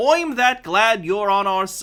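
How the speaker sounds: clumsy, bad put-on Irish brogue. Voicing an Irish cop character in a game: attempted Irish accent. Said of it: "I can't do an Irish accent".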